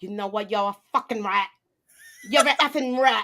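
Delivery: put-on New York accent. Role-playing as Olympia in a scene with a partner, in a New York accent. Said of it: "We gotta put our New York accents on".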